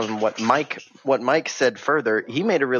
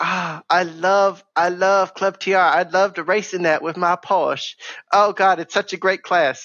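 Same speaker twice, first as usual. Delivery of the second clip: put-on Southern belle voice; 6 semitones higher than usual. On a podcast, mimicking what a man said about a racing class, Southern belle impression of Devin. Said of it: "that's what Devin sounds like".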